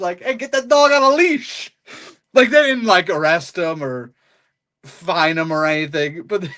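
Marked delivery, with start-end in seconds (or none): 0.2-1.7 put-on thick New York accent, pitched way up high. Retelling what someone in a car called out, in a heavy New York accent. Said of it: "he does the heavy New York accent".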